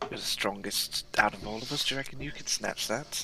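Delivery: whispered speech. Whispering in character to a party member about snatching the item: whispering to a party member. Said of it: "I'm going to whisper to Stifflock".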